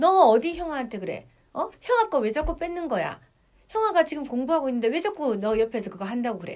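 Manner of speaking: loud, scolding tone.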